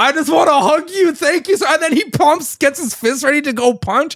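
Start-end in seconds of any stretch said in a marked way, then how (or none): 0.0-1.6 acted tearful delivery, words pushed out through tears. Retelling an anime scene where a character starts crying: imitating someone crying. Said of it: "Tojima starts crying".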